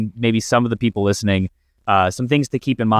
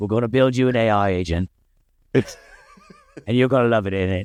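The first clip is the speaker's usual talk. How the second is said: put-on tough-guy British accent. Speaker imitates the action star whose way of talking he loves: Jason Statham impression. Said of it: "I love the way he talks".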